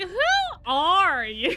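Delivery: loud, with pitch swinging up and down. Imagining how he would say it, speaker does a Kazoo Kid impression. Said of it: "What if he said it like the Kazoo Kid".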